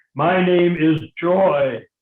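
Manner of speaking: very loud, slow, joyless, straight-and-narrow voice. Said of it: "she said in a most unjoyful sort of way".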